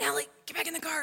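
half-shouted, hushed stage whisper. Retelling being called back to the car near wild rams: imitating Doug whisper-shouting. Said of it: "trying to whisper shout it to me".

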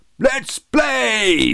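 very high boom, drawn out. Narrator reading Robbie Dobbins at the start of a cricket match, boomed. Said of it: "boomed Robbie Dobbins".

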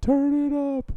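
very high-pitched cartoon character voice. Recalling The Simpsons sound gag: Homer Simpson voice.

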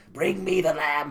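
barked cartoon villain delivery. Contrasting the new actor's lackluster voice with the original, do the Jafar voice from the old movie. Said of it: "Jafar in the old movie had, like, this".

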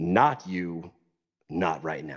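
put-on low guttural voice. Recalling what a person said to the speaker, deep guttural voice. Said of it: "in a very deep and guttural voice".

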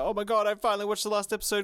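mock, high, weepy, teary, gushing voice. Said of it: "crying, crying, crying and shit".

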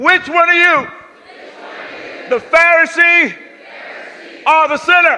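energized, lively, high, drawn-out call. Leading a crowd to repeat a question to a neighbour, louder and livelier. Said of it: "pick it up".

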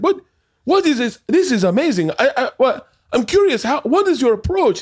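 very high-pitched put-on French accent. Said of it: "he's French accent".

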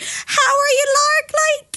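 put-on Irish-Southern accent, very high and very slow. Speaker retells a friend back from a year in Ireland greeting her, Irish-Southern accent. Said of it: "An Irish mixed with a Southern?".

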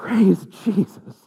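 very loud, very high-pitched tearful crying voice. Retelling a confession where the bishop spoke with tears in his eyes: imitating a tearful bishop. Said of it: "with tears in his eyes".

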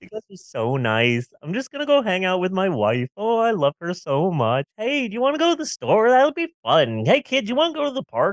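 giddy, euphoric, carefree rambling. Describing what bliss pills do to him, acting out a happy-go-lucky high. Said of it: "a nice euphoric feeling where I'm really happy-go-lucky".

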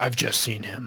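muttering, shaken and somber. Playing a character asked about the Shred Man, somber, shaken mutter. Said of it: "a little somber and shaken and kind of mutters".

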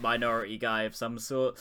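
ordinary talk, nothing marked

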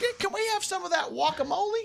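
put-on high grandmotherly voice.

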